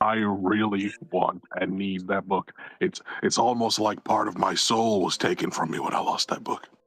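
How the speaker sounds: theatrical stage whisper. Acting in a scene, a character answers another character, whispering. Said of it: "I'm whispering".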